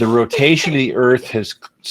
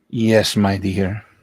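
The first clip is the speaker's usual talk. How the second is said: put-on smooth, thick Latin American accent; 2 semitones lower than usual.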